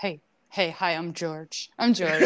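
high-energy put-on cat voice. Retelling what George the cat said in the same voice. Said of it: "And it was that voice".

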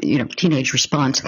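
usual speaking voice

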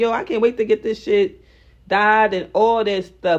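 ordinary talk

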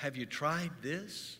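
mock-gentle, soft speech. Retelling what he asked after the speaker rolled out from under the car, imitating someone speaking very gently. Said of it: "he very gently said".

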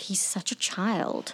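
very slow whisper under the breath. Voicing a character reacting to a rude companion: whispering under her breath. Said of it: "whisper under her breath".

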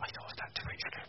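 fast, unvoiced whisper.

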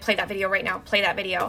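ordinary talk, nothing marked

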